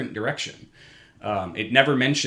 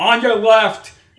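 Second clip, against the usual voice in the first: very high, very loud, angry yelling; 12 semitones higher, 11 dB louder than usual. Complaining about cyclists, mimicking one passing walkers: imitating a loud, angry cyclist. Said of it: "in this really loud, angry voice".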